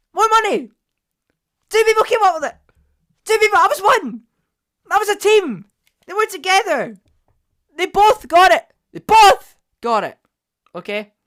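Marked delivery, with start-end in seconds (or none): 0.2-10.2 loud, high-pitched shouting. Reacting to a second place result: shouting. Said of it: "If you're wondering why I shouted there".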